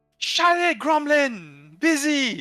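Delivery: shrill, booming, very loud, high, drawn-out yell. Voicing a character yelling down from upstairs: shout from upstairs. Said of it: "you hear a shout from upstairs".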